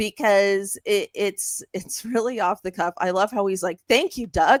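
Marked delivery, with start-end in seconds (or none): 3.9-4.6 put-on loud, happy, delighted, validated tone. Retelling a coach's rant, imitating a happy thank-you. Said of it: "so happy to receive some validation".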